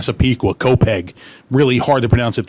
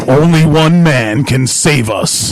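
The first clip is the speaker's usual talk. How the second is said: big, louder movie-trailer announcer voice; 2 semitones higher, 4 dB louder than usual. Showing the big voice used for voice work: big movie-trailer voice. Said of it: "the big voice".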